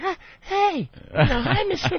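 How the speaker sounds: put-on very high, girlish little-girl voice. Retelling meeting an intimidating idol: imitating a little girl. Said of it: "like a little girl".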